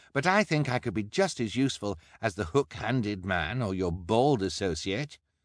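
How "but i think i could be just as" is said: ordinary delivery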